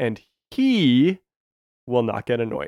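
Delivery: heavy stress landing on the word he. Speaker later points out their own word emphasis: stress on 'he'. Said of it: "Did you notice how I put the emphasis on he?".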